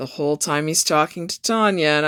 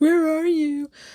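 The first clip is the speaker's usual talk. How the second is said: mock crying, very high, tearful voice; 12 semitones higher than usual. Retelling a phone call where she was crying: imitating someone crying. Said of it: "and she's crying".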